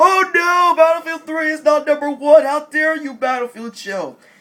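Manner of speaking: put-on very loud, high-pitched, indignant outrage. Imitating the subscribers who are Battlefield fans: imitating upset Battlefield fans. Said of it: "every one of you Battlefield fans who are subscribers of mine are gonna be".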